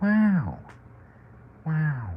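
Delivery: very high, yawning, lazy, stretched-out wow. Speaker jokes about how Owen Wilson always sounds: Owen Wilson 'wow' impression. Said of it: "That's how Owen Wilson always sounds".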